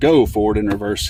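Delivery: stress on the word go. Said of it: "but it will not".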